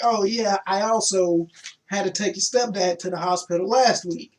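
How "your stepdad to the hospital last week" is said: ordinary talk, nothing marked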